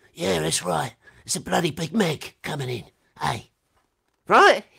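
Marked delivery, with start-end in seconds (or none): 0.2-3.5 impression of a raspy film-star way of talking. Asked for celebrity impressions, doing Jason Statham impression. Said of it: "maybe Jason Statham".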